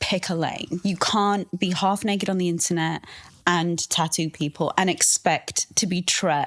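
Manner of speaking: ordinary talk, nothing marked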